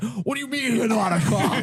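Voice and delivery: put-on girlish voice cracking mid-line. Retelling the moment someone finds out he's not a cop: imitating Lou Ciampi's voice cracking. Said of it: "his voice cracks".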